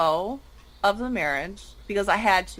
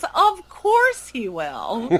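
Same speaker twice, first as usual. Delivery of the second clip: put-on matter-of-fact kid voice, slow, sing-song, drawn out; 2 semitones higher, 3 dB louder than usual. Retelling Madeline's answer about Grandpa, imitating Madeline's tone. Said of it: "And in this tone of voice".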